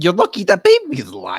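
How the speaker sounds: loud, swooping, put-on leprechaun accent. Asked to say the line one more time, in a leprechaun-like voice. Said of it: "in between Leprechaun and".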